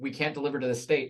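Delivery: ordinary delivery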